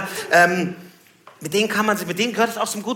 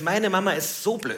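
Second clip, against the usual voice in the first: quiet, softer and slower delivery.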